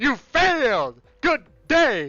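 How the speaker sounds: loud, booming, very slow, high-pitched delivery. Quoting a scene from the first Charlie and the Chocolate Factory movie: Gene Wilder impression. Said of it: "where Gene Wilder just goes".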